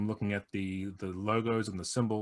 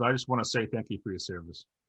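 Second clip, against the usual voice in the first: usual speaking voice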